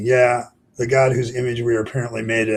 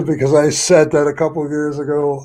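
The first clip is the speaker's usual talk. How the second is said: loud talking, laughing out the words; 4 semitones higher, 6 dB louder than usual. Explaining to Felicia why you are laughing, laughing while talking. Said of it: "I'm laughing, Felicia".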